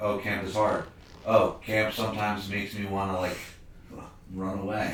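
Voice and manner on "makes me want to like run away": ordinary talk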